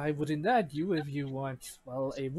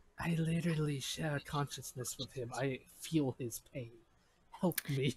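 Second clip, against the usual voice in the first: pleading whisper, quieter; 4 dB quieter than usual. Voicing a character heard as a whisper: whispering in character. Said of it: "you hear a whisper saying".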